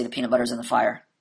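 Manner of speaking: super monotone, flat deadpan, zero inflection. Quoting how he'd answer a simple question, in a super monotone. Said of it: "just in that same super monotone".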